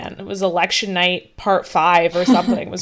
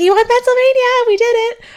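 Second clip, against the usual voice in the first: very high, raised, shrill scream; 8 dB louder than usual. Retelling how the speaker's mom called as the results came in: retelling mom's screaming. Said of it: "my mom called me like screaming".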